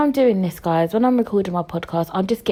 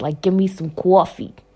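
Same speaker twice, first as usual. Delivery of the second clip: put-on New York accent. Speaker showing how Americans from New York talk, in a New York accent. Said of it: "If you was from like New York, then you talk like this".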